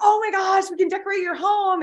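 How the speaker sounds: put-on thrilled enthusiasm. Retelling how the guest talks to clients: imitating someone excited. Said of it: "she's just really being excited".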